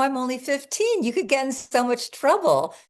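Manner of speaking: amused laughing speech. Recalling a man hitting on her at fifteen, she is retelling laughing while talking. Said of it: "just laughing".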